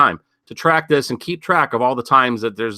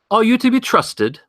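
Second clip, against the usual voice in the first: put-on English accent, very high-pitched; 10 semitones higher than usual. Retelling what a border agent said to the speaker, little english accent. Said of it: "I'll do a little English accent here the best I can".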